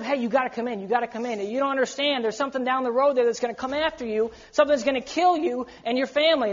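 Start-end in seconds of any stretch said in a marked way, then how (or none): none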